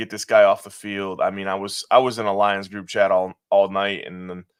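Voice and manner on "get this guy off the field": plain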